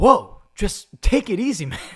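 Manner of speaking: rattled off quick and loud. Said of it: "Drake Bell".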